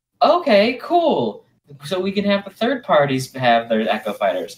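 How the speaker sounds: excited, high-pitched, loud hopeful voice.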